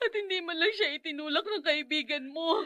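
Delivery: sobbing, tearful crying speech. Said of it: "Bakit ka umiiyak?".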